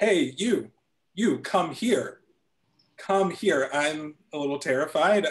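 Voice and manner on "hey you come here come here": long, stretched-out shout. Walking near New York University, a man yells at the speaker; retelling his yell. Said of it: "starts yelling at me".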